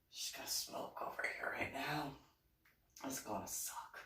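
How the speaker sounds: soft, voiceless whisper.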